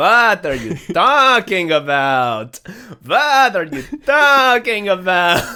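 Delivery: high, loud put-on old man voice.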